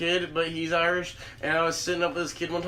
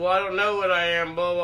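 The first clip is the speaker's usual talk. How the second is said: ordinary talk, nothing marked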